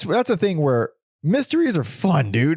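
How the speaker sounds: voice cracking. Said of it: "my voice cracked".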